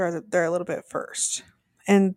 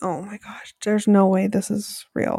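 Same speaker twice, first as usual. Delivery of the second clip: acted-out shocked disbelief. Retelling watching a shocking part: imitating own past shock. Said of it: "my mouth was dropped".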